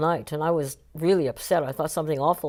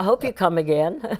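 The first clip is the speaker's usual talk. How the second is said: snide, sarcastic, fake-polite tone; 2 semitones higher, 3 dB louder than usual. Recalling a man whose audience walked out on him, retelling a sarcastic farewell. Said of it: "very sarcastically".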